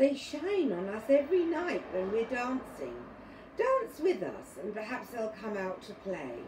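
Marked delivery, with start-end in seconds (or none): none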